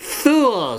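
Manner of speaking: shrill, very high, shrieking screech. Narrator reading Guenevoc's line to her consort, screeching. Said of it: "screeched Guenevoc at her consort".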